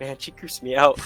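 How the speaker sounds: whispering in a character voice. Voicing a character who walks off and whispers to War: whispering in character. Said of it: "I'm gonna whisper to War".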